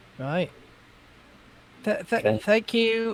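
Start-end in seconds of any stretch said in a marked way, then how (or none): 1.9-3.2 very slow, soft, mildly sarcastic, stammering. Thanking a ruler in character as a player: a little sarcastic thanks. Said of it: "a little bit sarcastically".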